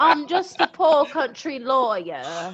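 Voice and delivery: Southern plantation, country lawyer accent. Trying out accents with the others, do the next one: country lawyer accent. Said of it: "Did I do it?".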